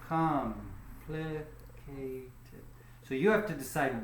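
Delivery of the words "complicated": COM stressed in complicated, slow and soft. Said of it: "where does the stress go".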